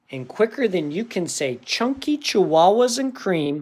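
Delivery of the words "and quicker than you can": ordinary delivery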